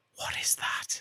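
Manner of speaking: very quiet, breathy, hushed whisper. Retelling a film scene, acting out the man whispering his question to her, whispered. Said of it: "He like whispers it to her".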